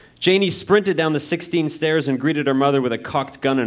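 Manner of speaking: ordinary delivery, nothing marked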